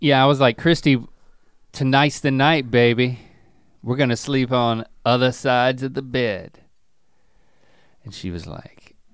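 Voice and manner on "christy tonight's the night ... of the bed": plain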